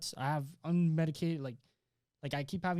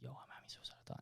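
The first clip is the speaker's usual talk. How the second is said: very quiet, hushed whisper; 3 semitones lower, 17 dB quieter than usual. Retelling what was said to the lady at the hospital: imitating own past whisper. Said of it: "I whispered, like".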